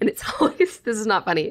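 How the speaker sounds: giggling through words. Describing a concert moment to another speaker, laughing while talking. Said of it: "I'm sorry that I'm laughing".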